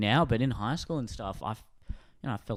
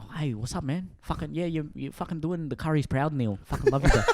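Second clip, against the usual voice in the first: fast, put-on Indian accent; 4 semitones higher than usual. Demonstrating how Indian speakers in Sydney talk: put-on fast Indian accent. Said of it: "the Indian one is like that, but it's, like, also very fast".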